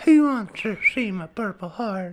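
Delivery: high-pitched voice with a whistling s sound. Doing a Family Guy character for the others: Herbert voice. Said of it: "Herbert the pervert".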